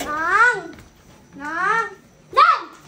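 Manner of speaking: loud calling shout.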